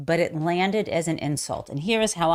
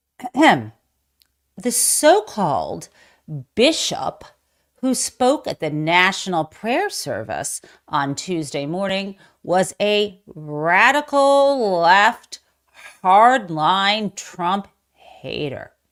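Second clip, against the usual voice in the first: loud, mocking, sarcastic delivery; 5 dB louder than usual. Reading a post from Truth Social aloud, in a sarcastic reading. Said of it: "I'm just going to read it in a sarcastic voice".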